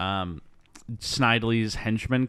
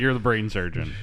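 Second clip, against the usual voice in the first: normal talking voice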